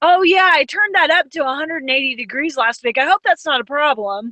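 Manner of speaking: mock sarcastic tone. Retelling a joke told to the caseworker checking the water: imitating a sarcastic joke. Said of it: "my husband's cracking jokes like".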